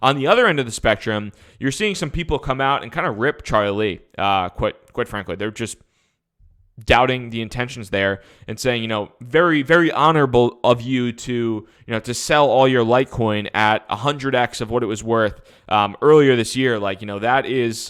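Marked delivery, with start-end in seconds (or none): none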